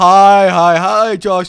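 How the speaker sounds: very slow, loud chorus of many voices at once. Playing a support group greeting a newcomer: several voices saying hi at once. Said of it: "trying to do multiple voices saying hi simultaneously".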